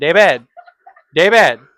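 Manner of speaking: put-on loud calling Filipino accent, V sounds dropped. Describing an impression of a Filipino mother calling David, imitating Filipino accent. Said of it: "She can't say V's because she's Filipino".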